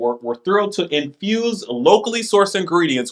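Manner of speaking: ordinary delivery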